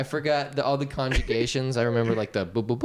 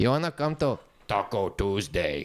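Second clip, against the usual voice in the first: joking, mocking put-on Mexican accent; 4 semitones lower than usual. Talking about taco tuesday, the speaker repeats the joke line: mocking put-on mexican accent. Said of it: "why people do that accent all day?".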